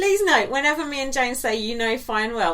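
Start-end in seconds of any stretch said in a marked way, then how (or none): none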